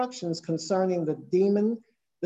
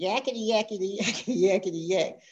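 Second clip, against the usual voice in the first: demon voice crying out with repetitive jabbering. Speaker retells a demon jumping up and down, crying out; shrill demon voice. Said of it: "crying in a shrill voice".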